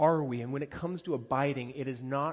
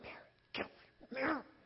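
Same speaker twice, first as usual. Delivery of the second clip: low-key, hushed whisper; 11 semitones higher, 9 dB quieter than usual. Retelling Martha calling her sister from the doorway: imitating a hushed, low-key call. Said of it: "she's trying to be low pro".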